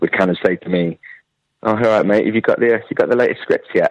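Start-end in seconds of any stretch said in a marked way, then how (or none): 1.6-3.9 acted, sly, knowing, mischievous, playful teasing tone. Retelling how people asked about the new scripts: imitating a mischievous tease. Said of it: "With a real mischievous glint in her eye".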